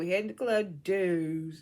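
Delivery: put-on slow Baltimore accent. Retelling what a cast member said, in a put-on Baltimore accent. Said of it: "how Taseki said Deuce in her, in her Baltimore accent".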